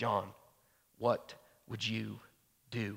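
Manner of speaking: soft, slow, creaky, quiet, sober voice.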